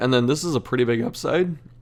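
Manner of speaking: voice breaking and cracking. Weighing a card's penalty and upside in a game, voice cracking. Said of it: "My voice cracked".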